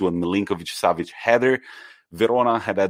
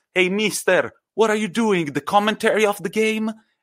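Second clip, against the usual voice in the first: mock, very high-pitched, shrill yelled shout; 13 semitones higher than usual. Retelling a match where a Sampdoria player calls out to Gattuso, imitating Quagliarella shouting. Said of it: "he shouts".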